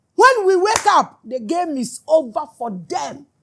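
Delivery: shouted out loud and high-pitched. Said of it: "This is why I am shouting".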